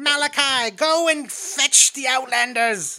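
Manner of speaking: put-on very high, old-timey, 1920s-sounding preacher kid voice. Describing how a voice sounds, the speaker acts out an old-timey preacher kid. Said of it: "It does sound like it's from like the 1920s".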